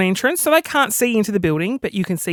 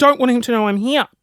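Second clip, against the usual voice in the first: usual speaking voice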